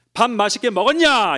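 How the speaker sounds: blunt and rude, very loud, very high. Contrasting a gentle question with the same words said in a rude, unpleasant tone. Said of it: "이러면은 똑같은 언어지만 굉장히 불쾌하잖아요".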